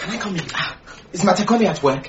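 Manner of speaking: hushed whisper. Asking to come in and whether Matekone is at work: whispering. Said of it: "No need to whisper".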